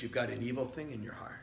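gentle, loving, soft and quick delivery. Retelling what he told the pastor, gently and lovingly. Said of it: "He said it gently and lovingly".

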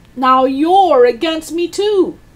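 high-pitched yelled shout. Narrator reads Grandma turning on her daughter over breakfast, shouting. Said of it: "shouted Grandma".

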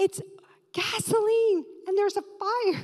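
high-pitched screaming. Speaker retells calling 911 a second time about a fire, retelling own scream. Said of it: "now I'm screaming".

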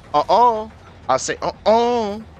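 high, sassy, scolding put-on voice. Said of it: "I don't know why I'm talking like that".

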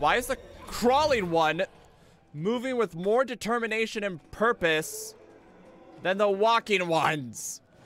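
very high, very loud, agitated, stressed ranting. Gamer cornered by a crawling enemy, stressed ranting. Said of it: "I'm sorry for ranting".

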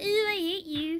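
mocking imitation of a woman. Mocking a woman for not just pressing play: mocking imitation of a woman. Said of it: "instead of being all".

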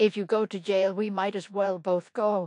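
plain

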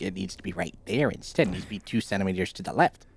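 soft, teasing, mocking parody. Teasing the other speaker, who keeps retrying something: mocking imitation. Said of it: "I was just making fun of you".

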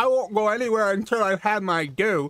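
put-on toothless old man voice. Retelling what an ox cart driver says to riders, toothless grandpa voice. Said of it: "the voice I'm giving the ox cart driver sounds like a grandpa who took his teeth out".

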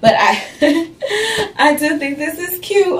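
high talk, chuckling and laughing through words. Showing an outfit while a dog distracts: chuckling while talking. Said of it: "I'm chuckling because of the dog".

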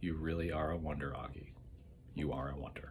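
whispering softly. A woman bends down to the narrator and speaks, whispering in his ear. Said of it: "She bent down and whispered in my ear".

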